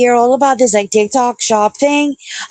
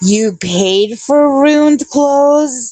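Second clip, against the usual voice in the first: put-on very slow, drawn-out, disbelieving, disapproving grandma voice; 3 semitones higher than usual. Imitating grandmothers reacting to ripped jeans: imitating a grandmother scolding. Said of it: "grandmothers being like".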